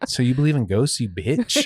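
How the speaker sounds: mocking, sneering, swooping sing-song. Retelling what a therapist asked, imitating the therapist's mocking tone. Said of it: "her tone was like".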